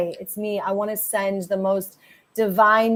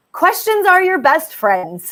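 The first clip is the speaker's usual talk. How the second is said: cheesy motherly voice, laid on, high and sing-song; 8 semitones higher, 7 dB louder than usual. Speaker repeats a saying they always use, in a cheesy mom voice. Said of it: "kind of in like my cheesy mom voice".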